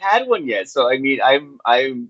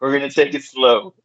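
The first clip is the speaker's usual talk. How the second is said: usual speaking voice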